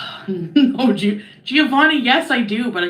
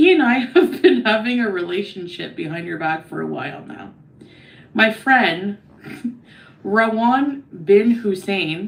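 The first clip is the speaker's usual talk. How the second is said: usual speaking voice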